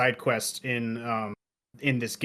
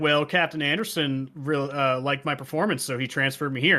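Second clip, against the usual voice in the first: ordinary talk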